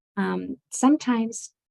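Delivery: normal talking voice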